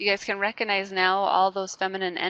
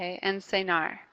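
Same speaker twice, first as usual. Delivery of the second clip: usual speaking voice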